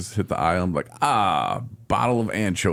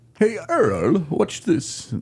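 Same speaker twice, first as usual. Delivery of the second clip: very high-pitched, horrible fake English accent; 12 semitones higher than usual. Imagining the first person who caught one, in a horrible english accent. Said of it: "That's a horrible English accent".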